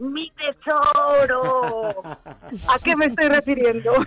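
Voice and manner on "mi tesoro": put-on eerie, creepy little creature voice. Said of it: "Si yo te digo con esta voz".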